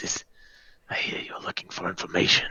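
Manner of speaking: very quiet, hushed, whispered murmur. Telling a story, quoting what he says to the group, in a real quiet voice. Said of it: "in a real quiet voice".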